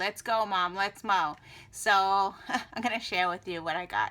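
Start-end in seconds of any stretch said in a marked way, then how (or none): 0.0-1.4 put-on begging voice. Retelling her daughter urging her to hurry, imitating begging. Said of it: "she was begging me".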